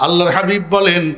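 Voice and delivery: normal talking voice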